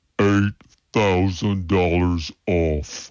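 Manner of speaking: stretched, drawn-out slow-motion delivery. A radio ad announcer replays the big deal in slow-motion delivery. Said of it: "Let's hear it again in slow motion".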